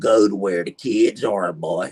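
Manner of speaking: put-on very deep, heavy, thick East Texas country accent. Retelling what a person once said to the speaker, in a very thick east texas accent. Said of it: "This person was like way way thicker than mine".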